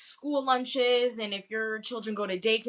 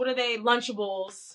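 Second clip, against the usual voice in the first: ordinary delivery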